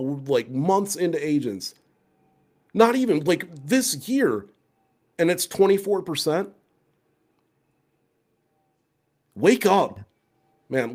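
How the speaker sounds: holding back a yell. Reacting to a survey figure about ai shopping agents, holding back a yell. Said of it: "I'm trying not to yell".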